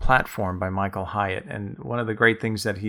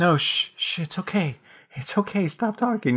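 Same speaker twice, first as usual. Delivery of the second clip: put-on high, hushed, soothing shushing like a toddler. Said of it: "you were like".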